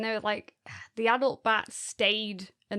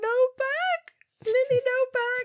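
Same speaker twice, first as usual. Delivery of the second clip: put-on crying toddler voice, higher and louder; 4 dB louder than usual. Retelling a two-year-old's complaint at nursery: imitating Lily crying. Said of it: "she was crying and crying".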